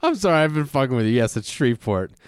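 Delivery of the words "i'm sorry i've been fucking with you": high voice, laughing while speaking. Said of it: "that's why I was laughing".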